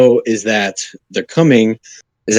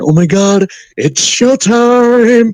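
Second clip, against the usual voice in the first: put-on giddy whisper, higher; 11 semitones higher than usual. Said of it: "just whispering backstage".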